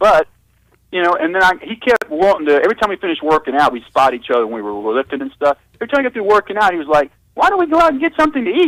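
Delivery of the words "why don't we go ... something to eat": squeaky, very high-pitched voice. Retelling what his lifting partner asked after every workout, in a high squeaky voice. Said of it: "he had a real high squeaky voice like this".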